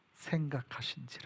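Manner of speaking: hushed, soft, slow whispered reading.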